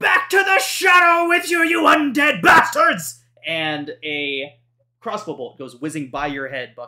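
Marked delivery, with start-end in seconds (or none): 0.0-3.2 put-on very high, very loud, shrill wild old-man yell. Narrator voicing an old man yelling at undead, wild old man yell. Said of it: "the wild yell of an old man".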